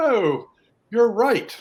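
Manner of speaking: put-on high, loud British accent.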